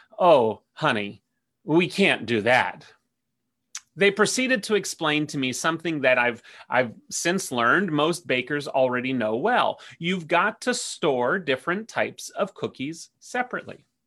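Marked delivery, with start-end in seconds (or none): 0.2-2.9 slow, sweet, gentle but firm no-nonsense Southern drawl. Retelling what another volunteer said: gentle but firm Southern accent. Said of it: "in her gentle but "don't mess with me" Southern accent".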